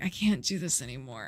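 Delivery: low, quiet, exhausted, completely spent voice. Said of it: "your liver's like".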